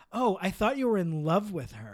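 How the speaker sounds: loud, swooping, cutting sarcastic tone. Retelling a character's reply to her cheating boyfriend; imitating a sarcastic comeback. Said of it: "she was like sarcastic about it".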